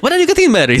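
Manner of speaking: terrible, very high, put-on Indian accent. Speaker imitates relatives asking about marriage, in a put-on Indian accent. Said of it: "Let me see if I can pull on an pull off an Indian accent for this".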